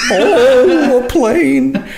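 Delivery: shrill, scared squealing yelp with drawn-out "oh". Mocking people who are afraid of planes, the speaker does a scared Richard Pryor voice. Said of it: "Richard Pryor voice".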